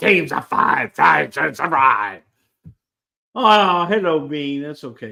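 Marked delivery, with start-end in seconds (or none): 0.0-2.2 put-on wrestling announcer voice, louder. Talking about Survivor Series, in a Vince voice. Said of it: "your Vince voice".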